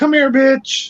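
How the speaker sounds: very high, sweet, nice-sounding coaxing call. Showing how a dog hears a rude phrase: sweet, nice tone. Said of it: "But it sounds nice".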